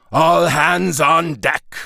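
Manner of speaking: high growling wolf-like voice. Reading a story aloud, voice the wolf's line, growled. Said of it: "growled the wolf".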